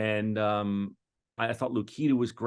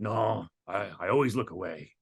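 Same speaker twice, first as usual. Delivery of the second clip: gruff put-on voice. Retelling a conversation about waving at trams: Harrison Ford impression. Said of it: "you do a great Harrison Ford impression".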